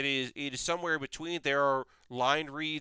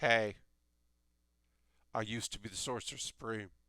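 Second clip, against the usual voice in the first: very bored voice, low and soft; 4 semitones lower, 5 dB quieter than usual. Act out a former Sorcerer Supreme talking to Doctor Strange, in a very bad, bored Nick Cage impression. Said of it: "That's my bored Nick Cage impression".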